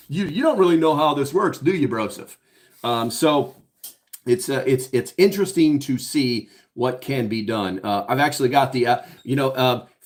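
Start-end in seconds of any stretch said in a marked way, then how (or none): 0.1-2.4 put-on smug, snickering taunt, giggling half swallowed under breath. Retelling how someone reacted when told to bring him back, imitating giggling under breath. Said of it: "he just kinda giggled under his breath".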